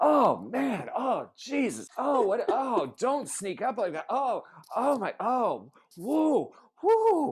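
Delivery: mock very high, startled, flustered string of yelps. Mocking a scene where Luke bumps into the doctor in the hall, imitating Luke's startled exclaiming. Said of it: "And Luke's just like".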